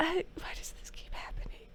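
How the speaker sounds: whispered, very quiet, bewildered, confused. Retelling what he said while processing a confusing crisis: retelling a whisper. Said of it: "He just whispers that".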